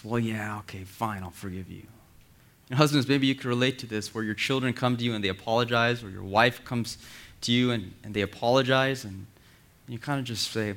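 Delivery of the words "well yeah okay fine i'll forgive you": soft, reluctant, grudging, disgusted sigh. A speaker acts out how listeners imagine God forgiving them: imitating a disgusted sigh. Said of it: "a sigh of disgust and says".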